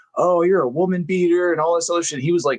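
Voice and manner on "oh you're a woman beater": acted, shrill, very high, furious screaming. Retelling an angry fan at a wrestling show: imitating someone screaming angrily. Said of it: "standing up and was screaming and was like".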